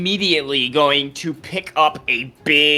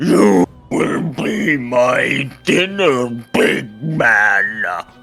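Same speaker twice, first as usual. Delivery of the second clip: huge, booming giant's bellowing voice; 3 semitones lower, 4 dB louder than usual. A giant answers a challenger's bellow across the valley: bellowing giant voice. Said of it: "He will bellow back in giant".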